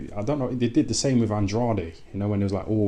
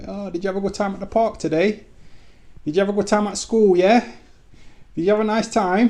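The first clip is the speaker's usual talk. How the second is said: put-on very high, loud, condescending baby-talk voice; 12 semitones higher, 5 dB louder than usual. Describing how people talk to kids, in a high-pitched talking-to-kids voice. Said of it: "with that high pitched voice. That's how you talk to kids".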